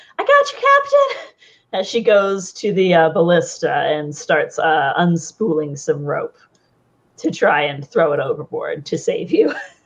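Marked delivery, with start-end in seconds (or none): 0.2-1.4 frantic, panicked voice at a very high pitch. A game narrator voices Sagira rushing to save the captain: panicked Sagira voice. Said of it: "you hear Sagira kind of panicked".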